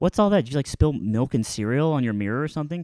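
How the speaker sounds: ordinary talk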